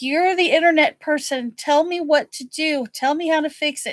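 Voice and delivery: angry yelling. The speaker acts out demanding help from him, retelling her own yelling. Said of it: "I'm like yelling at him".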